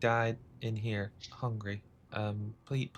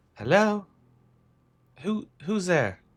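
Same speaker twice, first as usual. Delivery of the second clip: put-on high, spectral, ghostly child voice; 8 semitones higher, 4 dB louder than usual. A narrator voices a child's ghost rising behind a player, in a ghostly child voice. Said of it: "you see ghostly visages of the two children".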